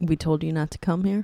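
ordinary delivery

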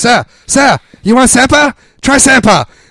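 shrill, very high, loud screaming. Retelling a food court worker offering samples: imitating a worker screaming. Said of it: "another one behind the counter screaming".

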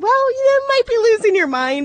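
playful, teasing, joking tone, pitched very high. Retelling a remark made to a woman while buying a lottery ticket, retelling a joking remark. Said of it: "jokingly, I wasn't being mean to her".

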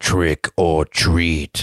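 deep, low demonic voice. Retelling a movie scene where a voice outside calls to Mikey; deep demonic voice. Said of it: "a deep demonic voice outside that says".

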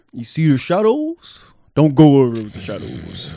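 deep character voice. After saying nobody can do Mufasa, try the speech yourself in a deep Mufasa voice. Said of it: "With a deep voice".

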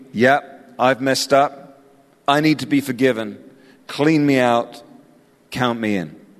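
normal talking voice

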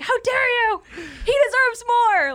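put-on shouting. Acting out a viewer yelling at the banker behind the glass: imitating yelling at the banker. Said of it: "yelling at this".

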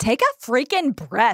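snapped out with a little sass. Teasing a co-host about how she told someone to breathe, mock-sassy snap. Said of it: "with a little sass".

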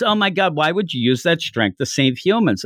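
ordinary talk

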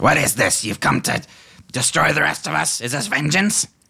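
very high-pitched character voice. Voicing Grey Gut at the cliff edge: Grey Gut character voice. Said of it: "gets right up to the edge of the cliff and he says".

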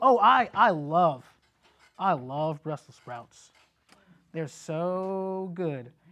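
sarcastic insincere enthusiasm, very slowly stretched out. Showing how the way you say things reveals meaning, sarcastic insincere tone. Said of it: "you automatically know from hearing me say it that way that I don't love Brussels sprouts".

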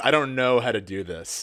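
mock careless, rude, curt, dismissive delivery. Retelling what a character said to the other speaker: imitating a curt, rude delivery. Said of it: "says it in, like, kind of a shitty way".

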